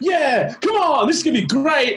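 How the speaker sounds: squeaky, very high, pumped-up, overexcited party jock voice. Mocking how Six talks, like a jock way too excited to drink: imitating Six as an overexcited jock. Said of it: "college jocks that's way too excited to get drunk".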